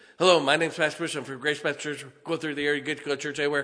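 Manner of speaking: words rushed far too fast, loud rattled-off patter. Teaching how to introduce yourself, showing the mistake: talking way too fast. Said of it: "because you talked way too fast".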